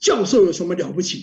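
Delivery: stern, loud delivery.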